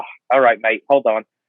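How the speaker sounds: irritated voice. Retelling being let in early after calling the hotline: imitating Paul Hayes sounding annoyed. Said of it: "So he was kinda, like, annoyed".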